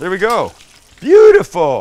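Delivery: very loud, high cry with a voice crack. Talking through laying something in place, voice cracking. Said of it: "my voice cracks".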